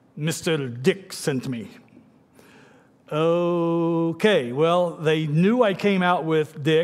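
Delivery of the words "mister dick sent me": put-on Arabic accent, broken English.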